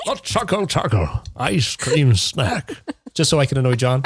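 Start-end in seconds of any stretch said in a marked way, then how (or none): 0.1-2.7 slow documentary true-crime narrator voice. Asked by another speaker to read a news item, true crime narrator voice. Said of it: "true crime voice".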